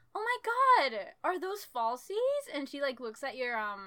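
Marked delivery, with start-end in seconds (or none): 0.2-2.6 put-on happy, bubbly squeal, high and loud. Retelling how she came up to the other speaker: imitating a happy, bubbly woman. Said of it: "If she comes up to you all, like, happy and, like, you know, bubbly".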